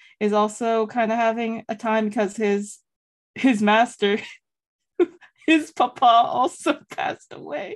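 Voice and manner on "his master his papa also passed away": half-laughed, giggly, laughing through the words. Talking about a book with another speaker, laughing while talking. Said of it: "I'm sorry that I'm laughing about this".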